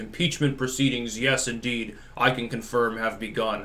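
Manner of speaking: play-acted grave, very solemn, dour official tone. Imitating how they say it, very dour and very solemn: mock-solemn, dour delivery. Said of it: "in a very dour, very solemn way".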